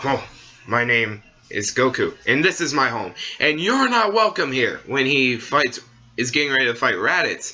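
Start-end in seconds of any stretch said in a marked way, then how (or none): 0.0-4.8 powerful, clear, forceful delivery. Quoting a fighter announcing himself before a fight: powerful Goku voice. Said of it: "he says it in a powerful voice".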